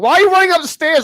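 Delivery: very high-pitched, shrill yell. Retelling yelling at characters running up the stairs in horror films: imitating yelling at the screen. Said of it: "I'm the guy yelling".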